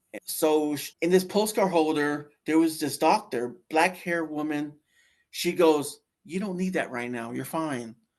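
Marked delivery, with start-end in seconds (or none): 6.2-7.9 mock calming, soothing voice, faster. Retelling what a doctor said to calm the speaker down, imitating a calming voice. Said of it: "She calmed me down basically".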